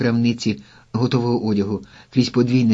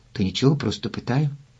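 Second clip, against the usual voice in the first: ordinary delivery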